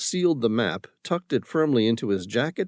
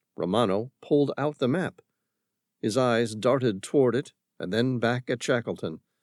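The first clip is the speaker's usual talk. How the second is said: ordinary delivery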